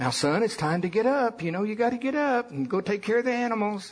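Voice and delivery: very high, sugary sweet motherly voice. Recalling his mother waking him at fourteen, imitating mother's sweet voice. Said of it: "my mother's voice, sweetly".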